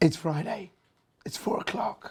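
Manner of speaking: husky, hoarse voice. Speaker with a lingering throat problem, starting to talk, in a husky voice. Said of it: "I've lost my voice, although I do sound husky".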